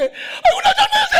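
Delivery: very high, loud crying-laughing sobbing wail.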